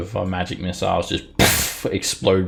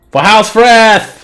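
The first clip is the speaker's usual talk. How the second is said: shrill, very loud, very high cry; 14 dB louder than usual. Voicing a drow charging forward: battle cry. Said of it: "he says, and he runs".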